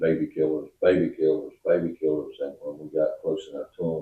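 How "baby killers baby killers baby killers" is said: ordinary delivery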